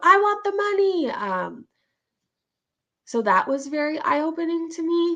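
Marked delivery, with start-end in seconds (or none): 0.0-1.1 insistent, shrieking, pitched-up screaming. Retelling how a mom screamed on a live stream, mock-screaming. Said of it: "Like screaming about".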